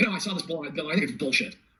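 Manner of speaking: normal talking voice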